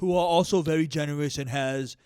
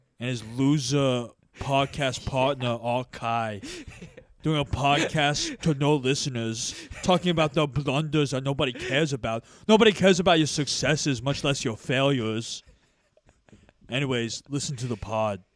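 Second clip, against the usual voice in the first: normal talking voice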